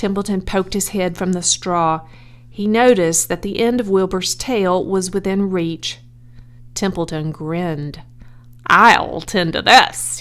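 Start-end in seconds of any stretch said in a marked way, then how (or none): 8.7-10.2 loud, slow, spoken through a chuckle. Templeton sees the end of Wilbur's tail within reach, chuckling. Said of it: "he chuckled".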